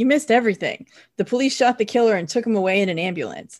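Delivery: ordinary talk, nothing marked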